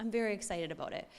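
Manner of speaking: plain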